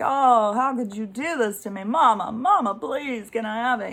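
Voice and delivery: put-on whiny, tearful, crying toddler voice. Retelling a two-year-old's fit over a refusal: imitating a whining, crying toddler. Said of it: "They're whining and crying like".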